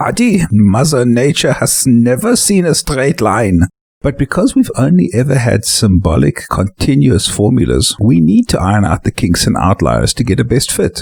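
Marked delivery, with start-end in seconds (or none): 0.0-3.6 put-on German accent, lecturing tone. Quoting an old professor's saying: Professor Zen's German accent. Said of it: "used to say with his German accent".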